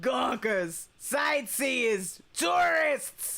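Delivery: put-on older, bitchier voice. Playing a security guard keeping gawkers out, doing a Roz impression, older and bitchier. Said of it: "I need to sound older and bitchier".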